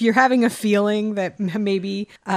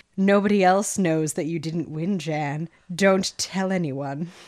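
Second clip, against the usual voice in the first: wicked, tempting, sinister little evil voice; 3 semitones lower than usual. Recapping a story where Jan's inner voice urges her to stay quiet: put-on evil little voice. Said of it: "has this evil little voice talking to her being like".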